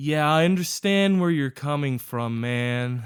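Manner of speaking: mock very depressed man voice. Retelling a phone agent's reply: imitating a very depressed man. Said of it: "most depressed person I've ever heard".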